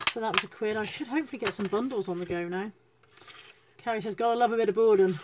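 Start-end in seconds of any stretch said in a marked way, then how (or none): 4.1-5.2 put-on northern English accent. Reading out a viewer's comment, in a northern accent. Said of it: "I don't know why I said that in a northern voice".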